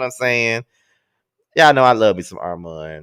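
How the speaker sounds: plain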